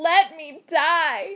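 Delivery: high-pitched, crying out, begging and pleading. Narrator reads a woman's reply to the man holding her, crying out. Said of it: "cried A Kin Sao".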